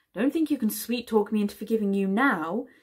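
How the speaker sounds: firm, scolding, chiding voice. Mizim scolds the man who arrived late, between kisses. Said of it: "she scolded him".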